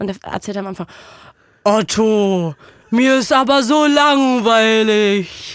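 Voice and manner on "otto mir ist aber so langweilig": loud, very slow, drawn-out character voice. Quoting the cartoon elephant complaining to Otto: Benjamin Blümchen voice. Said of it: "ich kann's nicht so gut nachmachen, weil ich nicht so eine tiefe Stimme habe".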